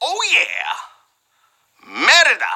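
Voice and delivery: offhand Spanish accent on Merida. Answering a trivia question about Brave, in a Spanish accent. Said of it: "I said that with a Spanish accent".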